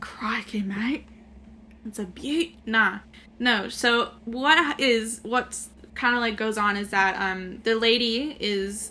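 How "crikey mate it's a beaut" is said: breathy, half-whispered character voice. Joking about a film scene, quoting the hero: imitating Crocodile Dundee. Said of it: "when he looks at her, he's like, "Crikey."".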